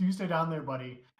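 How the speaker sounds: usual speaking voice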